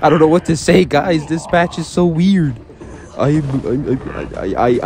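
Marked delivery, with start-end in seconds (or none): 3.2-4.3 flustered, slow stammer repeating I. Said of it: "I'm stuttering so much".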